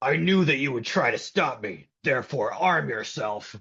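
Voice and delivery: storybook-style ogre character voice. Asked to do the ogre in the story, the speaker answers in an ogre voice. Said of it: "Can you do the ogre?".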